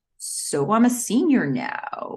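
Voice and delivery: slow, reluctant, dragging on the words.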